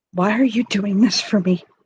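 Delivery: gentle, tender, bare soft voice. Voicing a character who speaks to a man, softly. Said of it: "And she'll say softly".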